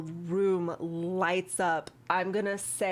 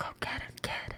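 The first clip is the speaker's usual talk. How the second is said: soft, breathy whisper, very close. Narrator voices a whisper a character hears, with a hand on the shoulder: whispering. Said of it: "you hear just like a, a whisper".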